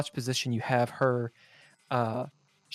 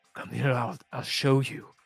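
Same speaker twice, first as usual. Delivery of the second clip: zombie-like man voice. Voicing a drooling, bloodshot man walking forward to grab a player: zombified man voice. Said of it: "almost like zombified teeth as he goes".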